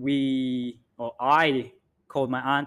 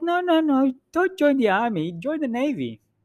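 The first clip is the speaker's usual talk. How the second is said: poorly done put-on Filipino auntie accent, much higher; 12 semitones higher than usual. Retelling what the speaker's auntie said back, poor Filipino auntie accent. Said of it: "That's my poor Filipino auntie accent".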